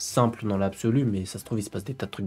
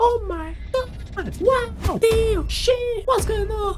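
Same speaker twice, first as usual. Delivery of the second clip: put-on very high, squealing, shocked shriek. Acting out how girls react when the man falls: imitating girls screaming in shock. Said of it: "La réaction des meufs".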